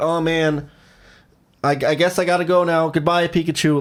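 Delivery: slow, drawn-out, manipulative tone heavy with guilt. Retelling a cartoon scene, imitating Ash: mock guilt-tripping Ash voice. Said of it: "Like a fucking, like, fourth grader manipulating their, like, boyfriend".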